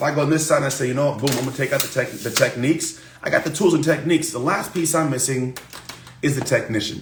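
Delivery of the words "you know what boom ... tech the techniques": usual speaking voice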